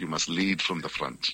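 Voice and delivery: ordinary delivery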